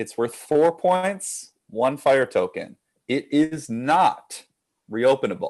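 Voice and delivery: slow, careful, deliberate quiz-host reading. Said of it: "I'm gonna read it slowly".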